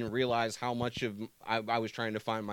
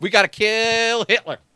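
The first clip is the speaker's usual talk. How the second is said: shrill, booming, high yell, kill stretched out; 11 semitones higher, 14 dB louder than usual. Mocking an actor who keeps his own accent among Europeans: Tom Cruise impression. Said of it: "and then Tom Cruise rolls in like".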